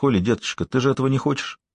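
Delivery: plain reading voice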